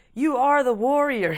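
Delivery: mock chipper yoga instructor voice. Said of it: "chipper dominatrixes".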